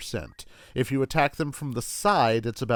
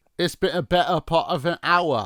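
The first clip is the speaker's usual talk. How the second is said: mock British accent, higher; 3 semitones higher, 3 dB louder than usual. Repeating a game swordsman's line after calling him British: imitating a British accent. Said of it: "He's British".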